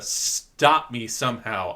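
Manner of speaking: put-on begging voice. Retelling a movie scene, begging Kaneda to stop him: imitating Tetsuo begging. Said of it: "he is begging Kaneda".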